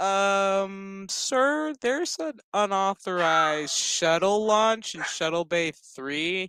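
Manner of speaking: acted feigned innocence, slow, with drawn-out um. Speaker recapping a scene, quoting the daughter, acting out feigned innocence. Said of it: "perfectly acts out like she don't know".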